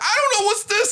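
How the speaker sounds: acted, very high, irritated, angry outburst. Imitating Juice getting angry: imitating Juice getting angry. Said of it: "Juice, he'll get angry at you".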